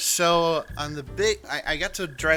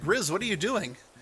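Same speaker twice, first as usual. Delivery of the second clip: mock raised voice, short of yelling; 4 semitones higher than usual. Retelling the boss calling out to the speaker, retelling the boss's raised voice. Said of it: "he a raised voice".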